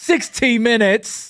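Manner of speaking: put-on British accent. Saying the name of the australian show: british accent. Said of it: "That was the British accent".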